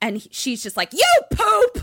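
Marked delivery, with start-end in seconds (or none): 0.9-1.8 very high, very loud, shrill, unhinged, enraged furious scream. Retelling a scene where a driver is cut off: imitating someone yelling. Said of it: "she's yelling out of her car".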